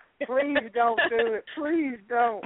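crying, very high, tearful voice. Acting out a tearful plea against a curse: acting out crying while pleading. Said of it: "I cry".

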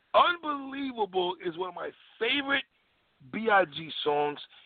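slow, smug, self-satisfied, conceited voice. Repeating a statement again, slowed down, in a slow, conceited voice. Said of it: "Let me slow that down again in my conceited voice".

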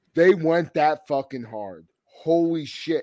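ordinary talk, nothing marked

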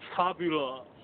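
fabulous said in a Cajun accent. Saying the word after being asked to say it Cajun style: Cajun accent. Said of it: "Cajun style".

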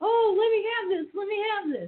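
put-on very high, eager, pleading little-kid voice. Retelling spotting the magazines at checkout: acting like a little kid. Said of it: "I'm like a little kid going".

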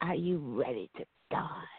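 hushed, breathy, whispering creepy clown voice. Imagining how the clown would sound under the bed in the dark, creepy clown voice. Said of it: "That's what it would sound like".

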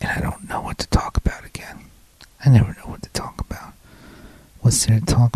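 whispering. Speaker talks to listeners through the whole episode, whispering. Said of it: "I'm whispering the whole thing".

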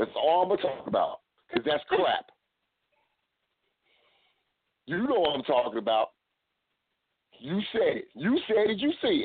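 worked-up, agitated, heated ranting, high and swooping. Ranting about who gets the title: worked up, heated rant. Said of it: "let me calm down".

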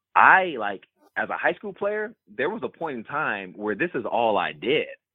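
ordinary delivery

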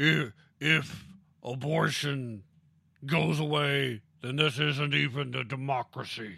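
loud, very slow, emphatic protester voice. Quoting a lady who said silly things: imitating a lady protester. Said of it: "That was a pretty good impression".

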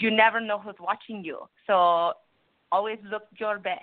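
put-on Puerto Rican accent. Recalling her mom's advice from growing up, quoting her in a strong Puerto Rican accent. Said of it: "in her very strong Puerto Rican voice".

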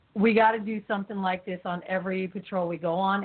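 ordinary delivery

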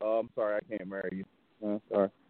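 soft, sorry-sounding delivery.

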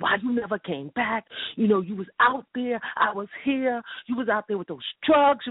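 acted-out, high-pitched screaming, crying out. Recounting falling into a woman's lap, retelling screaming at mother. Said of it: "I started screaming at my mother".

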